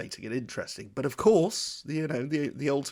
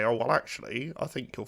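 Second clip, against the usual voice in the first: put-on pedantic know-it-all voice; 2 semitones lower, 4 dB quieter than usual. Imitating a keener-eyed viewer correcting the hosts: imitating a pedantic viewer's voice. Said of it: "I don't know why I'm doing that voice".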